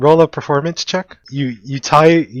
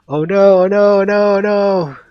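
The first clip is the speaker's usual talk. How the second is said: very slow, drawn-out, high-pitched screaming; 6 semitones higher than usual. Narrating a fantasy game, voices scream from the burning trees: screaming. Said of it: "You hear screaming saying".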